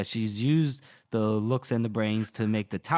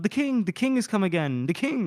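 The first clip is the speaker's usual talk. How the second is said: high, excited squealing cry of joy; 9 semitones higher than usual. Retelling a scene where someone announces the king: imitating someone squealing.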